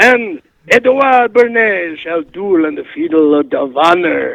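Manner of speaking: fake, put-on French accent. Playing Edward Bernays in a comedy bit, answering an insult: put-on French accent. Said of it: "your accent's going all over the place".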